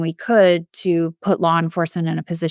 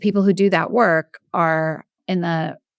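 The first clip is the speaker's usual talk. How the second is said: ordinary talk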